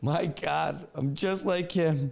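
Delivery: very slow, drawn-out, blubbering fake crying. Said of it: "And he starts weeping".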